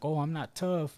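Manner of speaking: words sobbed out, tearful crying voice. Retelling a video of a jailed man crying: imitating someone crying. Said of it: "crying, like".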